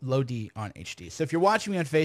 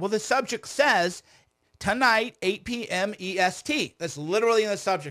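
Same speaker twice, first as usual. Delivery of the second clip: worked-up, heated, fired-up voice, pitched high; 7 semitones higher than usual. Complaining that the answer is already in the subject line: fired up. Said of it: "So you can see I'm getting fired up right now".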